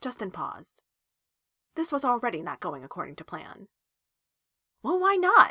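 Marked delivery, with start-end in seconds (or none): 4.8-5.5 shrill, very high-pitched, very loud, demanding tone. [name] presses Joe after Joe laughs off having a crush; demanding. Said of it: "he demanded".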